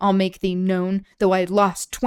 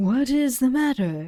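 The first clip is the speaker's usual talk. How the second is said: storybook dark-wizard villain voice, pitched up; 5 semitones higher than usual. Reading a play aloud, voicing another character: Voldemort-type voice. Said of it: "I did it like a Voldemort type".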